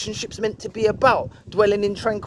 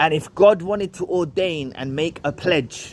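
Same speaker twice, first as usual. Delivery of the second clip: plain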